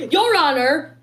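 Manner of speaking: high voice sounding as if heard over a bad mic. Recalling how Trent always addresses the judge in court: imitating Trent's high voice. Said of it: "in a high voice with a bad mic".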